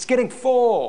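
snarky, high-pitched yelling. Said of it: "some snarky person in the back yelling out".

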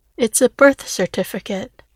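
ordinary delivery

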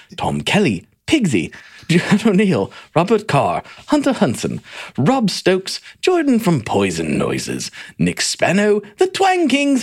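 fake British accent, high and sing-song. Reading out a list of names; fake British accent. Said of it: "I'll be British this week".

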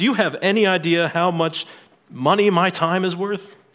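booming cartoon villain voice. Retelling an angry traveler at a ticket counter: loudly demanding, imitating. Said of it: "he very loudly says".

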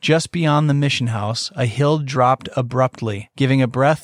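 plain

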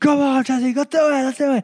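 put-on, very high, fired-up screaming. Retelling a racquetball match, psyching himself up: imitating own past screaming. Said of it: "I'm screaming at myself".

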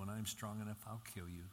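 usual speaking voice

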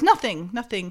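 ordinary delivery

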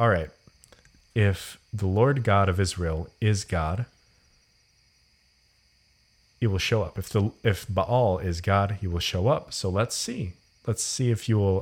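plain

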